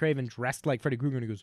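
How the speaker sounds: ordinary talk, nothing marked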